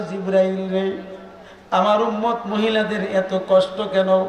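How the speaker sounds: ordinary talk, nothing marked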